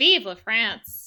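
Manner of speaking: glum, downcast put-on French accent. Asked by another player, a player does the Athos French accent impression. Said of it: "would you like to do an impression of his French accent?".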